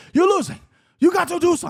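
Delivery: very high voice. Quoting a legend coach telling his losing fighter to act: Rafael Cordero impression. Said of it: "That's a perfect Cordero impression".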